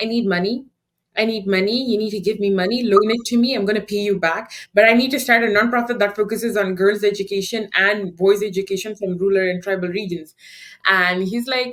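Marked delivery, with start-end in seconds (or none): none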